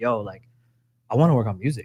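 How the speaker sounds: mimicked whisper. Recounting how they met, the speaker acts out him whispering to everybody. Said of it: "he's like whispering to everybody".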